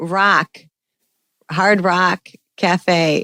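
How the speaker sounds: Chicago accent with Chicago O sound. Showing another speaker how a Chicago accent sounds: Chicago accent. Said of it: "a big giveaway are the O's".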